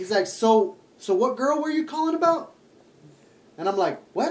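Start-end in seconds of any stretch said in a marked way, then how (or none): 0.3-2.5 put-on southern-sounding accent. Retelling a phone call with a man, imitating his deep Southern accent. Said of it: "this fucking dude with like a deep South accent".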